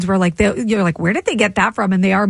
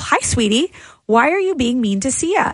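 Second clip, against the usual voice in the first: put-on very sweet, mock-sweet voice; 4 semitones higher than usual. Reading a listener's text about what she'd say to a girl, mock-sweet tone. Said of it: "said very sweetly to the girl".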